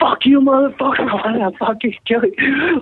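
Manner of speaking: very high, menacing, threatening scream. A comedian retells a heckler's threat from the front of the stage, retelling a screamed threat. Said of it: "punk heckler threatens comedian on stage".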